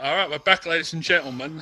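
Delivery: put-on British accent, host-style. Retelling what the other speaker just said: imitating a British accent. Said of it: "did you develop a British accent".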